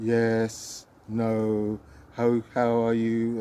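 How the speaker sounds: robotic, loud, very slow, flat monotone. Speaker demonstrating how an uninterested person answers, in a flat monotone. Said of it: "when people have a flat tone".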